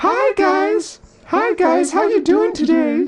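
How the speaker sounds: very high, slow, made-up put-on voice. Playing with double voices on stream, speaking in a high put-on voice. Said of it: "I should like speak in like a high voice right now".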